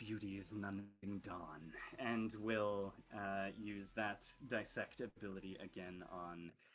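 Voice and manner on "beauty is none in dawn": muttered fast under the breath. Game narrator voices a female character mid-scene, quick mutter under breath. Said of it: "quickly mutters under her breath".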